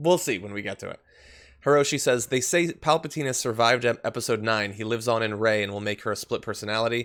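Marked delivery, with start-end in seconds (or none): none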